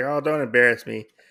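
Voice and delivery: normal talking voice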